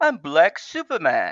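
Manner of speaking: put-on English accent from Britain. Quoting a movie line: Idris Elba British accent. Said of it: "in his British accent going".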